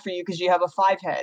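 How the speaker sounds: ordinary delivery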